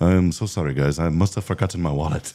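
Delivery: put-on French-tinged American accent. Retelling what a visiting friend said about his wallet: French American accent. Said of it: "in his French American accent".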